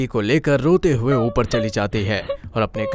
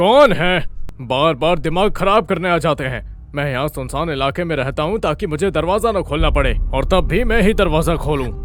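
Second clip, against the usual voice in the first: grumbling, pitched-up voice; 5 semitones higher than usual. Sara's grandfather, hearing a knock at the door, shouting. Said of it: "अरे चिल्ला क्यों रहे हो?".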